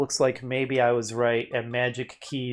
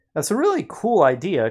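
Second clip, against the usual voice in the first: sudden puberty-like voice crack, high and loud; 6 semitones higher, 6 dB louder than usual. Reacting to an idea someone just described, voice cracking. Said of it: "why did my voice crack like I'm in puberty again".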